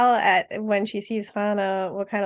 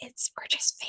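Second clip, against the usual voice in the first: very quiet, hushed, much quieter. Acting out someone leaning in to say something, very quiet. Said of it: "very quietly say".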